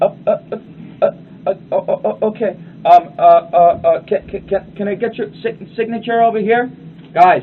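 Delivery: faltering, stammering, hesitant mumble. Showing a seller who falters when asking for a signature, hesitant mumbling. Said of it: "you stop mumbling".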